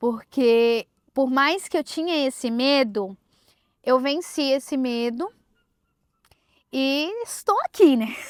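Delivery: near-tearful, on the verge of crying. Telling own story to an audience: nearly crying. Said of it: "Tô quase chorando".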